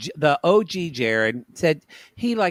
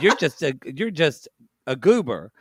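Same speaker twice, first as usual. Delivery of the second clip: plain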